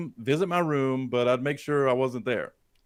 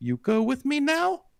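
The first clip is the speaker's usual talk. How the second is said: put-on very high, slow, drawn-out little-girl voice; 11 semitones higher than usual. Retelling what Rose said through the window: Rose's eight-year-old voice. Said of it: "in that same eight-year-old voice".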